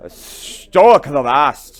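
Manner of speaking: booming, very loud Irish brogue. Told to say the name with a brogue, speaker voices the character, Stoick with Irish brogue. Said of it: "You got to say it with an Irish brogue".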